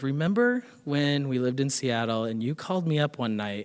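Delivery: normal talking voice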